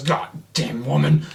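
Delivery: loud troll voice outburst. Telling a story, the speaker voices the figure in the cave: retelling a character's outburst. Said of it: "And he goes".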